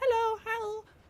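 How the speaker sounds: very high-pitched, loud squeaky voice.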